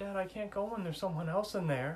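put-on high, nervous child voice.

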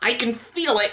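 trembling voice. Narrator voicing a man watching a line of melted stone, voice quivering. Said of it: "his voice quivering".

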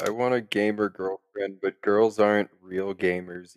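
soft, deadpan, sarcastic monotone. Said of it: "we're being very sarcastic here".

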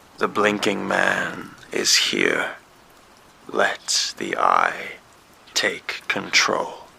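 slow, rough, trembling, dragging raspy voice. Reading a horror story, voicing a voice on the phone: slow, raspy, shaky voice. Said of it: "It was slow, raspy, and shaky".

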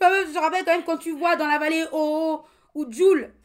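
very loud, fired-up, heated ranting outburst. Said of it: "doivent baisser le son de leur écouteur".

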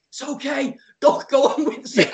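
very slow, high, noble, valiant, brave-faced. Retelling rolling around as people come past him: mock-valiant reassurance. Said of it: "I'm being really valiant".

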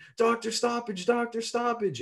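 very high-pitched put-on yelling. Recounting Conor on the ground with a snapped ankle, a speaker retelling Conor's yell. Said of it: "and you're yelling".

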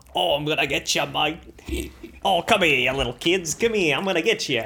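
loud, put-on Australian accent. Retelling chasing kids around, in a put-on australian accent. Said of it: "hear an Australian".

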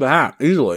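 speaking with mouth full of food. Answering a co-host's question on the podcast while eating, talking with mouth full. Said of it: "Sorry that I'm talking with my mouth full".

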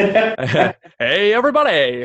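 loud, swooping radio announcer voice. Podcast host greets listeners with his guest on air, in a radio announcer voice. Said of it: "my best radio voice".

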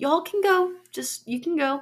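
high, loud, dismissive brush-off. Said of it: "And he's like".

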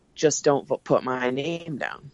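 whispered voice. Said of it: "I whisper to Justin".

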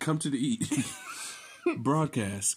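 synthetic smart-speaker voice-assistant delivery. Imitating a smart speaker broadcasting a call to eat, Google voice impression. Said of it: "But it says in the Google voice".

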